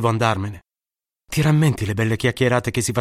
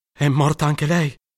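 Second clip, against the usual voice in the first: trembling, quavering, shaking voice; 4 semitones higher than usual. Narrator reads a man asking again after getting no answer, trembling voice. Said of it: "con la voce tremante".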